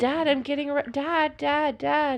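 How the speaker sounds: high screaming, repeated over and over. Retelling waking her dad when armed people came: imitating her own screaming. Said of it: "I start screaming".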